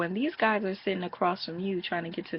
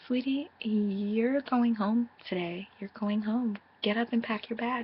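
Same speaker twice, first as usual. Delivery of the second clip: mock falsely sweet, sugary, spiteful, vindictive tone; 4 semitones higher than usual. Retelling how two housemates woke another to send her home: imitating a vindictive sweet voice. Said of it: "this vindictive, sweet type of voice".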